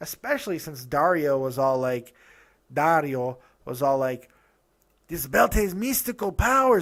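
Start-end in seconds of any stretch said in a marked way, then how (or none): 5.1-6.8 pitched-up, stock put-on Mexican accent. Quoting Dario, the speaker uses a put-on Mexican accent. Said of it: "that was my go-to Mexican voice".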